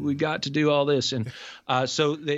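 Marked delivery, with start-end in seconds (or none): 0.0-1.1 put-on Oklahoma and Arkansas accent. Quoting a politician at a town hall: cheesy Bill Clinton impression. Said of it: "your cheesy Bill Clinton impression".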